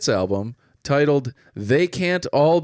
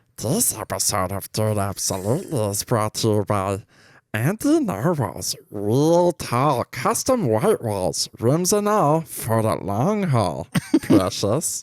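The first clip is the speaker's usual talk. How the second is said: put-on fantasy creature voice; 4 semitones lower than usual. Reading a sponsor line as a joke: Smeagol voice.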